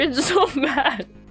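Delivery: words broken up by hard, continuous laughter. Tasting a failed homemade quiche cake, laughing while talking. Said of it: "I'm laughing so hard".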